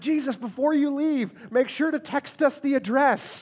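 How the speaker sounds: anxious, fretful, worried, troubled tone. Retelling Thomas's reply to Jesus, imitating Thomas, mock-worried. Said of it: "hear the worry and trouble in his voice".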